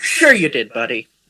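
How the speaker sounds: put-on soft, grandfatherly old man voice. Nodding at a character who boasts about a kill, in a grandpa voice. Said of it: "I say in like a grandpa like voice".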